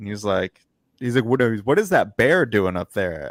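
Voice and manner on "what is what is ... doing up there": put-on heavy, broad, thick American Southern accent. Retelling a coach's sideline question about a mascot, thick southern accent. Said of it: "this thick Southern accent".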